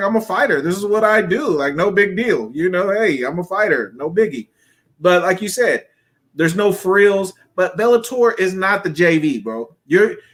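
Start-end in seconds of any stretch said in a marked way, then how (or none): none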